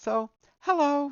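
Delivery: slipping into a very high falsetto. Practicing a feminine voice and slipping by mistake into falsetto. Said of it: "went into falsetto there for a minute".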